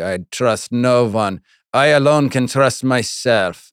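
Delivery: put-on Jamaican and Russian accents blended together. Acting out a person's remark in a mixed Jamaican-Russian accent. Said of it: "It was kind of like a Jamaican accent and a Russian accent all mixed together".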